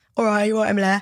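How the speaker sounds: Leicester accent impression. Asked if it's a Leicester accent, showing how people there talk, Leicester accent. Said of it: "in Leicester, they kind of talk like Leicester".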